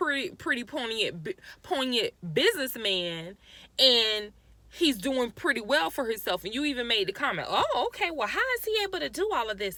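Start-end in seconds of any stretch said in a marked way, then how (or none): 7.5-9.8 mocking, childish, childlike mimicking voice. Retelling what the woman said while looking someone up: childish mimicry of her voice. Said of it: "you talk like this".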